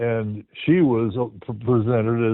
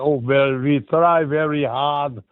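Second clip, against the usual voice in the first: put-on thick German accent, spoken very slowly; 3 semitones higher than usual. Retelling the musicians' reply in an interview: imitating a thick German accent. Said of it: "they have these thick German accents in their English".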